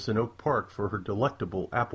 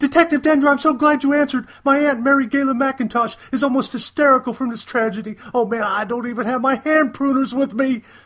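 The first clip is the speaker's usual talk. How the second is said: shrill, very high, loud, anxious blurting; 10 dB louder than usual. A caller reaching the detective about an emergency, blurting out anxiously. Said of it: "Codit blurted out anxiously".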